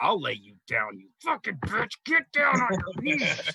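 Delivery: furious, raging battle yell, swooping and rising. Tabletop player, as their character landing a final attack, Thargrak's furious yell. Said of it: "I'm gonna yell out".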